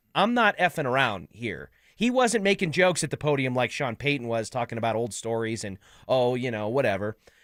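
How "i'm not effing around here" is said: mock dead serious, all business, swooping tone. Quoting the team owner's free agency statement: imitating Greg Penner's serious tone. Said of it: "he said it with a tone that was like".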